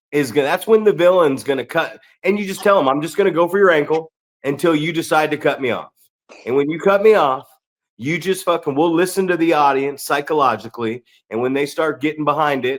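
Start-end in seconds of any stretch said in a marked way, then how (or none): none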